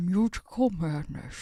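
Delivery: put-on Scottish accent in a film-star voice. Saying a phrase after being asked to do it like Sean Connery: Sean Connery voice. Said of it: "you gotta say it like Sean Connery".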